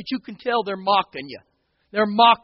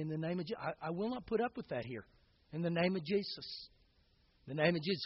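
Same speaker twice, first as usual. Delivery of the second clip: very quiet, under the breath, barely above a hush; 5 semitones lower, 18 dB quieter than usual. A pastor acts out what he said to her, starting in a real quiet voice. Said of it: "I just begin in under just a real quiet voice and say".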